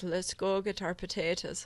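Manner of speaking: put-on Irish accent. Warming up with the word potatoes before an Irish friend's story: put-on Irish accent. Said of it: "the only word that can get me into the accent is potatoes".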